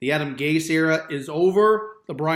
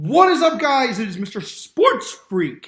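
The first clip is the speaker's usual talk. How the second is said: cracked voice, breaking mid-line; 6 semitones higher, 5 dB louder than usual. A host greets his viewers at the start of a new video: voice cracking. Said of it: "My voice cracked there".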